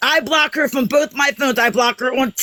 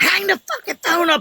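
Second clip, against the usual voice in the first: put-on high, mild yell, toned down from screaming; 5 semitones higher than usual. Retelling an argument about a phone call: imitating own screaming. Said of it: "shaking, screaming".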